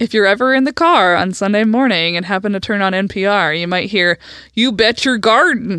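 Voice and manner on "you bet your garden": put-on Philadelphia accent. Act out a guy from Philly heard on NPR on Sunday morning, imitating a Philadelphia accent. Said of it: "this guy from Philly who sounds like a Pittsburgher".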